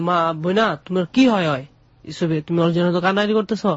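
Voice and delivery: ordinary talk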